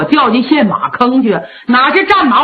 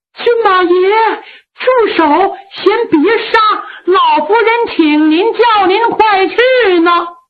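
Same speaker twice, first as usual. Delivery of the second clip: panting, out-of-breath, high yelling; 8 semitones higher than usual. A maid runs up calling to the prince consort to stop an execution: breathless shout. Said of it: "气喘吁吁的高喊".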